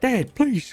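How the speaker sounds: crying, pleading voice. Voicing a daughter pleading with her father: crying daughter voice. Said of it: "And she's, like, crying".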